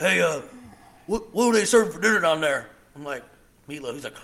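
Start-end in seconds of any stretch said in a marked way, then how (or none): 0.0-2.7 put-on hillbilly wrestler voice, louder and higher. Imitating a man from North Carolina, in a hillbilly Hulk Hogan voice. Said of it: "he talked kind of like this here".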